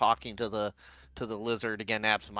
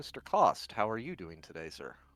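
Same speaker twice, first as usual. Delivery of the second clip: slightly quieter, softer, easy, relaxed delivery; 2 semitones lower, 4 dB quieter than usual. Retelling meeting a man, the speaker greets him, a little quieter. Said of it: "I say a little bit quieter".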